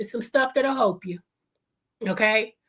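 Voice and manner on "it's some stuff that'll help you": put-on old grandfather voice. Addressing his audience, repeating his last sentence in his granddaddy's voice. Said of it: "in my granddaddy's voice".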